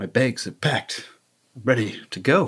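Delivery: bad put-on dramatic spoken-word performance voice. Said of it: "That's a terrible [name] impression".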